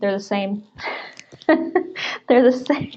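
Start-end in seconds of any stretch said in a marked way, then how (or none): 1.5-3.0 breaking up with laughter mid-line. Answering a question while reading another comment, laughing while talking. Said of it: "I'm laughing at Andy's".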